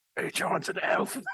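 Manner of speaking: loud, leaning-in stage whisper. Leaning over to whisper a secret to another character: whispering. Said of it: "lean over and whisper to her".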